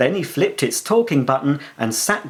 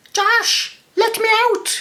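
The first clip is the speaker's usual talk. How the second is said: very high, thin, squeaky little voice. Reading a story aloud, voicing the mouse Midas: squeaky voice. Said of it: "he squeaked".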